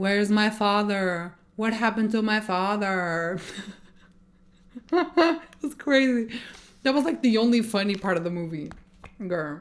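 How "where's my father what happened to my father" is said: put-on wooden, deadpan, flat monotone delivery. Mocking a performer's lines from a movie, in a flat monotone delivery. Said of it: "the lines in a monotone voice, like".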